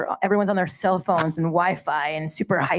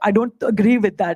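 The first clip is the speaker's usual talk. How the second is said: put-on Indian-accented speech; 3 semitones higher, 5 dB louder than usual. Recalling family debates at the dinner table, quoting the speaker's father: imitating Indian father. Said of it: "my Indian father would be like".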